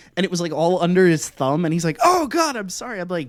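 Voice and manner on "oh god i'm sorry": yelling in a very high, shrill voice. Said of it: "we're, like, yelling at each other".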